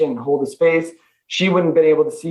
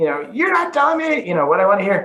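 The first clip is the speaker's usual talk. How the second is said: play-acted frustrated screaming, played light, angry, swinging pitch; 4 semitones higher than usual. Recounting how a woman screamed at the speaker: retelling a woman screaming. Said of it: "she's screaming at me".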